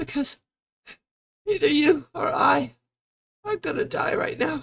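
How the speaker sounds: very high sobbing, voice breaking mid-phrase, halting. In a tabletop game, a fey character answers why she is sad: crying. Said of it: "And she just keeps crying".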